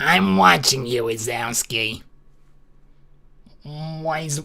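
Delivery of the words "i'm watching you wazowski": very low, dropped character voice at bottom of range. Doing a quick line from Monsters, Inc.: Roz voice. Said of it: "How did the bloody voice actor for Roz do that?".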